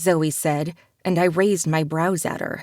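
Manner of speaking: plain reading voice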